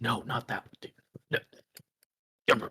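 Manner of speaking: hushed, quiet whispering. Voicing a character who is turned aside, not addressing anyone: whispering to himself. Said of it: "he's just, like, whispering to himself".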